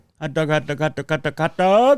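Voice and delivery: put-on stadium vendor call. Trying to repeat how a woman said it, raised-pitch stadium vendor call. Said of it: "She had a raised pitch, much like a, uh, vendor at a sports stadium".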